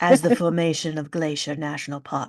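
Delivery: over-dramatic, movie trailer style narration voice. Reading a book's back cover aloud with dramatic flair, dramatic movie voice. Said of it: "this is my movie voice now".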